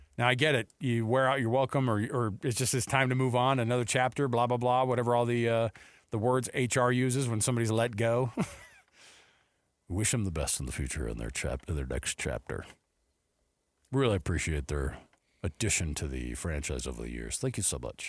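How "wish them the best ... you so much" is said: very low, deep, soft, formal reading delivery. Talking about someone being let go, the speaker puts on an HR email voice. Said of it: "That's my HR email voice".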